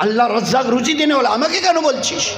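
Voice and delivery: sharp, scolding motherly voice.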